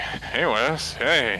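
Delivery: put-on tired drunk voice. Recalling a man who greeted the speaker by name, imitating a tired, drunk-sounding voice. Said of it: "he was doing like this voice, and I was unsure if he was like tired, drunk".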